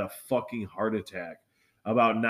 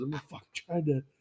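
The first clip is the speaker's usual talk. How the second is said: mock words blubbered tearfully through crying; 4 semitones higher, 4 dB quieter than usual. Retelling an argument, the speaker imitates a woman crying. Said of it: "she starts fucking crying".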